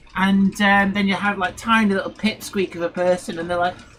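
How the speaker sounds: ordinary talk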